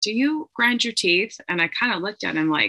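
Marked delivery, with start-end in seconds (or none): 0.0-1.4 plain, direct, high-pitched delivery. Retelling a dentist's question during an appointment: imitating dentist speaking quietly. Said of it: "really quietly".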